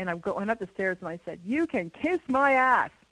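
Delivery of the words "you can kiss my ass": slow, drawn-out, raised, heavily sarcastic jab. Recounting jokingly telling the workers while going up the stairs: retelling a sarcastic remark. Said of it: "I was being very sarcastic".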